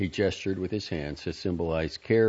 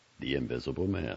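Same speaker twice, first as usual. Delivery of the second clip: plain reading voice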